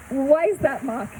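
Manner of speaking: ordinary talk, nothing marked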